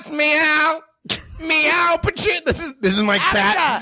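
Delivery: very high, squeaky film-star voice. Doing a young Pacino with his whole body shaking: Young Pacino impression. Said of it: "why does your whole body shake when you do Young Pacino".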